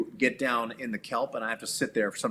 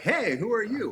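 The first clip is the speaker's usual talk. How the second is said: high, piping put-on fish voice. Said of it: "be like".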